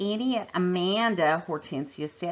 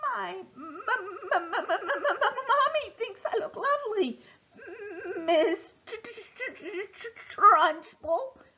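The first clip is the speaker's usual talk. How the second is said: stuttering, shaking, trembling voice, very high pitched; 13 semitones higher than usual. A child replies after being shouted at: stuttering, shaking. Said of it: "Amanda stuttered".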